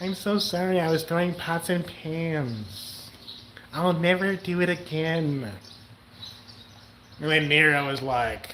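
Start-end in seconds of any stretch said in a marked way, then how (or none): 0.0-5.5 put-on tiny, small, childlike voice. Joking that she apologizes for throwing pots and pans: imitating a little kid voice. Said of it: "she does this little voice where she sounds like a little kid".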